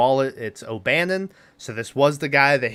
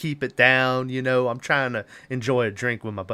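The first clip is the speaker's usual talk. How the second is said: fake southern accent with drawl. Retelling what a man at a bar said: put-on southern accent. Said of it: "I don't know why I'm giving him a southern accent".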